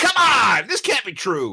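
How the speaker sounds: very high, swooping holler. Describing a show they can't stop watching, retelling yelling at the TV. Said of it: "I'm actually yelling at the TV going".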